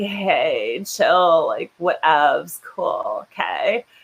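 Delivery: low, creaky vocal fry with drawn-out hey. Imitating the women in the video pieces chatting, in vocal fry. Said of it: "talk in the vocal fry".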